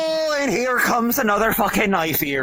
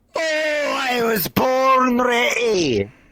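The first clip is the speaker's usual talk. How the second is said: heavy, laid-on-hard, slow put-on Scottish accent; 3 semitones higher than usual. Answering another player in character that he is ready: heavy put-on scottish accent. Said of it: "going so fucking hard in the accent".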